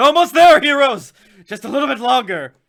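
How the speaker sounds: very loud, high-pitched urging shout. The narrator voices Nasius calling to the heroes, Nasius shouting out. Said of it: "Nasius is shouts out".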